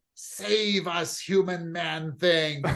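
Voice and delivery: very slow, hissing, pleading spider creature voice. Spider creatures reel back and plead with a human, hissing spider creature. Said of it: "They kind of reel back and hiss".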